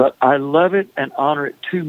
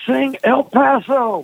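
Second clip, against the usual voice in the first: play-acted very high, shrill drunken holler; 10 semitones higher than usual. Recounting an overserved man at the bar waking up to shout a request: retelling a holler. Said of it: "he hollered out".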